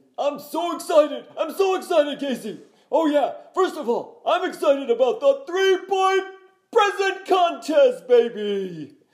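put-on very loud, very high hyped announcer, drawn-out baby. Asked by Casey what you are excited about this holiday season, answer in a Dick Vitale impression. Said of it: "do your Dick Vitale impression".

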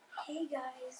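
very quiet, soft ASMR-style voice. Showing how they could talk for the podcast: ASMR voice. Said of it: "we should talk like an A S M R".

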